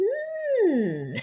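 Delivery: very high, loud, drawn-out hmm. Doing a quick impression after mentioning the Dark Crystal: bad Skeksis impression. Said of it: "My bad impersonation of a Skeksis".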